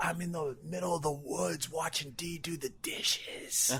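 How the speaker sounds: hushed, slow, drawn-out, very quiet whisper. Retelling a caller speaking from the woods, imitating a whisper. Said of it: "why are you whispering?".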